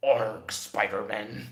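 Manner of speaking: loud pirate-monster cry, "arg" at the start. Trying out a pirate version of Venom, the speaker does Pirate Venom voice. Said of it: "And then Pirate Venom would be like".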